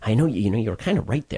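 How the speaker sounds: whispering. Retelling what a guest said quietly afterward: imitating someone whispering. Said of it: "And she's whispering".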